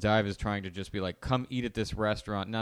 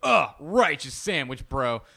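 loud, belted, over-the-top, larger-than-life gushing enthusiasm; 6 semitones higher, 7 dB louder than usual. Imitating Guy Fieri praising a sandwich: Guy Fieri impression. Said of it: "has to be a little larger than life".

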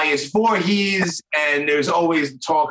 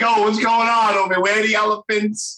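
clumsy, exaggerated mock Brooklyn accent; 5 semitones higher than usual. Joking about how he would sound there, in his stupid Brooklyn accent. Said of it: "with my stupid Brooklyn accent".

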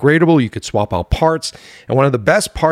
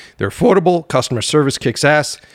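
voice breaking and cracking mid-line. Reading a sponsor message on the show, the speaker's voice is cracking. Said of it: "did you hear my voice crack?".

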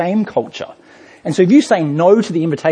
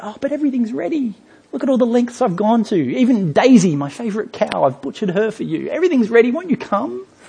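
put-on pleading, begging tone, pitched up; 6 semitones higher than usual. Retelling the king's invitation to the wedding banquet, mock-pleading as the king. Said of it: "a bit of a pleading tone".

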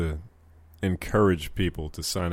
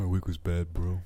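put-on soft-spoken voice. Answering how the week went, imitating Vic's voice. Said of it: "Why you do his voice like that?".

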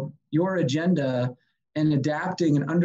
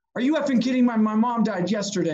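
put-on teary woman's voice, much higher; 2 semitones lower than usual. Retelling how a lady opened her door to them; imitating a teary woman. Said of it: "And she gets all teary".

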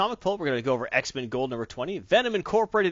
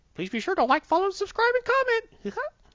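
squeaky voice with swooping pitch. Closing the show's disclaimer to viewers, in a Mickey Mouse voice. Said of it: "you had to do the Mickey Mouse voice".

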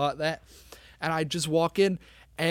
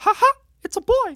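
high-pitched, loud, badly done squeal; 9 dB louder than usual. Joking about being delivered by Mickey, in a bad Mickey Mouse voice. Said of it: "literally the worst Mickey I've ever heard".

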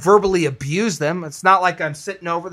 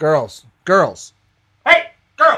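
put-on slightly raised, stern, firm voice; 3 dB louder than usual. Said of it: "raise my voice slightly to make sure".

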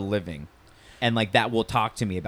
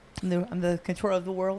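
tiny, small, high, soft voice; 9 semitones higher, 5 dB quieter than usual. Doing a quick impression after mentioning small voices for big characters: Mike Tyson voice. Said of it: "I always think of Mike Tyson".

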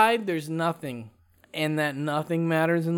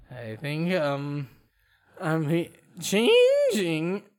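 voice deliberately cracking, faked. Joking after a strange drink that he is changing: fake voice cracking. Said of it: "my voice keeps cracking".

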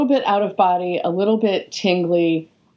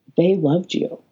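hushed stage whisper. Retelling how someone turned them to face the clapping audience: imitating a quiet whisper. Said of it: "quietly whispered in my ear".

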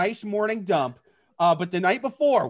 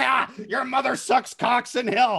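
put-on possessed, horror-girl speaking-in-tongues voice; 4 semitones higher than usual. Joking about a birth scene, speaking in tongues: possessed girl from The Exorcist voice. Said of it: "starts speaking in tongues like the girl in The Exorcist".

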